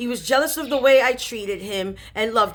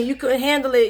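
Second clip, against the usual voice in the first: put-on taunting, mocking tone; 2 semitones higher than usual. Retelling how one brother taunted the other: imitating someone taunting. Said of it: "just making fun of him, mocking him".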